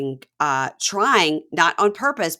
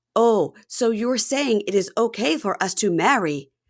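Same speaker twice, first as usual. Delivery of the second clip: full, slow, fake British accent; 5 semitones higher than usual. Speaker quotes Nikki talking to Justin's mom: imitating Nikki's full British accent. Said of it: "a full British accent".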